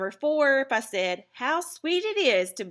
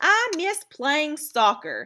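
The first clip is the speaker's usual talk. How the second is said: emotional, pitched-up exclamation said with some feeling; 7 semitones higher, 4 dB louder than usual. Explaining exclamatory sentences, giving an example sentence said with emotion. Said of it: "I'm saying it with some emotion".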